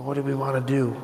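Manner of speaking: whispered voice. Game player voicing Tex whispering to Mank about what to do, whisper. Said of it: "Tex is gonna whisper to Mank and be like".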